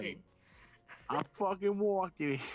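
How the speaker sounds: put-on Boston accent. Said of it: "can you give him a Boston?".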